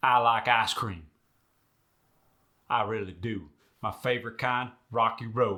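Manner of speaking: Midwestern American accent, tight, firm i sounds. Showing how the sentence sounds in the Midwest: Midwestern US accent. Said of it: "Not so in the Midwest".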